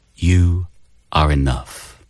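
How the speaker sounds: soothing, calming voice. Asked to say a line, showing a soothing voice. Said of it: "I have a very soothing voice".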